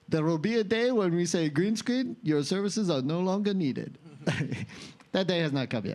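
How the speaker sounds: put-on French accent. Quoting a man from the Unreal teaser, in a French accent. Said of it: "Some guy says with a French accent".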